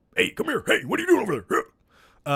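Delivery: high ghost voice. Talking about Keaton coming back, trying a quick bit: Beetlejuice impression. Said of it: "that's my Beetlejuice impression".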